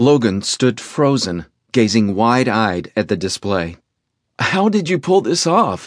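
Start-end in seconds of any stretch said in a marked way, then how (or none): 4.4-5.9 rough, hoarse and pitched-up. Reading fiction, Logan asks Chase about the display, hoarse. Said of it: "he asked hoarsely".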